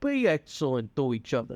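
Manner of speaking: put-on Italian mobster accent. Two speakers redo a movie quote as Italian mobsters, each taking a role; Italian mobster accent. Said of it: "let's do it with in Italian mobster accents".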